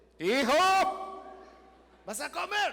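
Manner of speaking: shouting out loudly.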